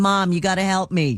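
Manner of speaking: plain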